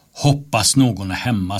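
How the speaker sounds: plain reading voice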